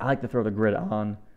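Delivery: cracking voice. An instructor walking through graph settings in a lesson, voice cracking. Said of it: "Sorry, voice crack".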